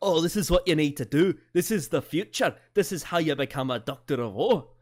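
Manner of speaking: put-on loud Scottish accent. Imitating Capaldi's Doctor lecturing about becoming a Doctor of War: Moffat impression. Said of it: "your Moffat impression sounds like the Scottish people from the film Brave".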